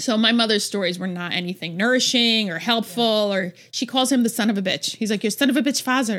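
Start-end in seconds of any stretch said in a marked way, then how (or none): 5.2-6.2 put-on Arabic-sounding accent.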